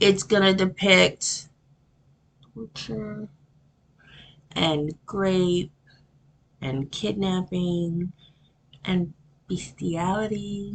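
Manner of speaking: whispering. Warning viewers before a disturbing case so YouTube won't hear, whispering. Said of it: "I'm whispering because I don't want YouTube to hear".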